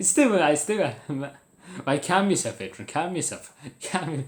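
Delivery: laughing while talking. Trying to calm down and get back to the topic: laughing while talking. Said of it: "I'm able to continue now".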